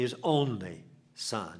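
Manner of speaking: "only" stressed, drawn out slow with a falling tune.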